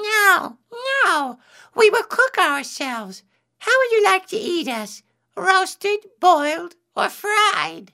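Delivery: tiny, very high squeaking voice. Reading a folktale aloud, the rice grains answering Anansi, squeaky. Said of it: "the other rice grains squeaked".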